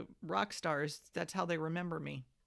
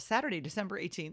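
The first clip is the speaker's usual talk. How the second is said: ordinary talk, nothing marked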